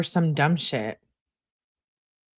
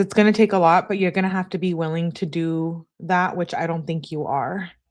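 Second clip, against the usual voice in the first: ordinary talk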